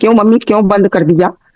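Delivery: ordinary delivery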